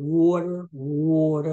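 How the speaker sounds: Philadelphia accent on water, said twice. Joking about the word water: Philadelphia accent. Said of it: "that's my Philadelphia accent right there".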